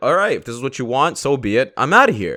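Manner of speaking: ordinary talk, nothing marked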